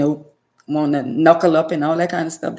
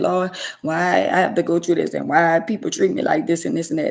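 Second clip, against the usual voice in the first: put-on crying voice. Retelling own past prayer to the lord: imitating own past crying. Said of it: "I remember me crying and saying".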